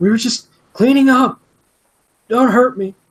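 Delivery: very high, shrill, frantic panicked yelling. Running a game, the speaker voices a character under intimidation: yelling. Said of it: "Just yells".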